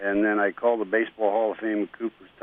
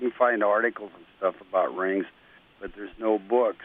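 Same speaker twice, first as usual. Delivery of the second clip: normal talking voice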